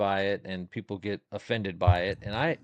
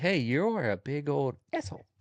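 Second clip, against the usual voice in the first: put-on gentle voice, higher; 4 semitones higher than usual. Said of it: "the very gentle voice".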